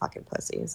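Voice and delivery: muttering under breath. Playing a character who walks away from the others, muttering under breath. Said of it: "muttering under my breath".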